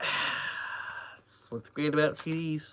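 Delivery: slow, breathy sarcasm, near whisper. Finding a CD case broken while showing CDs: sarcastic. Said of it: "I say that sarcastically".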